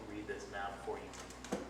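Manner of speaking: usual speaking voice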